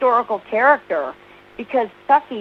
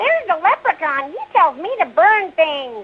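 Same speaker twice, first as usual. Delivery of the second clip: put-on high, pitched-up cartoon kid voice; 7 semitones higher than usual. Answering a request for a favourite line in the character's voice: Ralph Wiggum voice. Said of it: "what about Ralph?".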